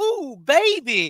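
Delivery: a touch of feminine flair, high and loud. Imitating a friend who has a little feminine-ness to him: imitating James, a little feminine. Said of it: "James got a little feminine-ness to him".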